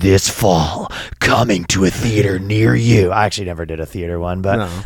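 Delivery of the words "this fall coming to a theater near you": slow movie-trailer announcer voice. Recalling past voice work and showing the announcer voice: movie-trailer announcer voice. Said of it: "sometimes I did do the announcer voice. Sometimes I would do this".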